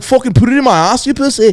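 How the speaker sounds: put-on Liverpool accent. Joking about how accents sound, in a put-on Liverpool accent. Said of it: "I was doing, like, Liverpool right there".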